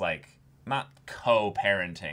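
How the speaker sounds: normal talking voice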